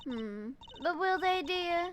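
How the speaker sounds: put-on genteel Southern belle accent. In a role-play scene, a speaker voices a woman character in a southern belle voice. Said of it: "gave her like a Southern Belle or something voice".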